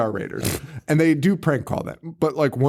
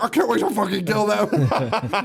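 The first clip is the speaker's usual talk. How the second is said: imitated screaming, higher; 7 semitones higher than usual. Retelling how people in the background screamed threats: imitating people screaming. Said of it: "the people in the background are just screaming like".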